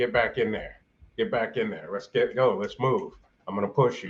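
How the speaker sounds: plain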